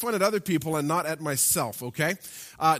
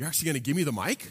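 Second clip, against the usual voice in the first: mock sarcastic tone, faster. Retelling what she said when handed the mic, mock-sarcastic quote. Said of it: "she sarcastically said to me".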